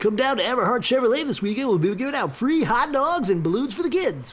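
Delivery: very high car-dealer radio-ad announcer voice. Still doing the bit after being teased about it, radio guy voice. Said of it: "You don't like my radio guy voice?".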